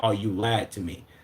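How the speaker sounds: put-on scolding tone. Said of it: "you said that, like, you was my mama".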